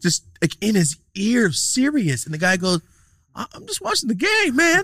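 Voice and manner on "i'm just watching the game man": overly polite delivery in a very high voice. Retelling how a guy answered a man shouting in his ear at a game: retelling a polite reply. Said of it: "All polite".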